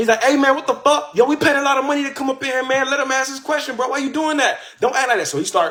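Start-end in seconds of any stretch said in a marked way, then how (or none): 0.2-5.3 high-pitched mock hollering and screaming. Retelling how a brother in the crowd reacted: imitating someone screaming. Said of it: "my brother starts screaming in the back".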